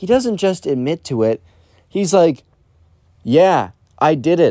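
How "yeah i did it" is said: slow, openly proud tone. Retelling how the Weird Kid admitted it, the speaker is imitating a proud admission. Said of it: "He said it so proudly".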